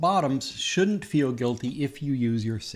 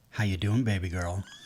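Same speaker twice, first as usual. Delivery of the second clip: imitated, growly, sexy put-on voice; 6 semitones lower than usual. Describing how a scene partner checks in during a scene: John Brownstone's growly sexy voice. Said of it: "in the growliest, sexiest fucking way".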